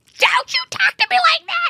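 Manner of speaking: mock angry, shrill, furious scream, voice shooting way up. Retelling how Taylor screamed at Brandy on the girls' trip, retelling Taylor's angry scream. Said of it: "She like screams at Brandy".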